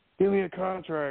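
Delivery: mock hollering, high-pitched yell. Retelling shouting from the crowd at an event: retelling own yell. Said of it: "I'm yelling at Regal, like".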